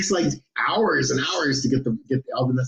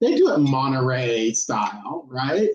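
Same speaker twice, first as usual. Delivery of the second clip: put-on valley girl voice, swooping "Monterey". Repeating the words to show how they sounded: put-on valley girl pronunciation. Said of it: "I just said it like that".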